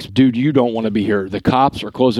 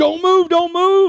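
very high-pitched scream at the top of lungs. Recounting his arrest by a cop in riot gear, retelling a cop screaming. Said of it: "he is screaming at the top of his lungs".

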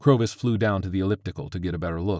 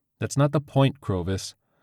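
ordinary delivery

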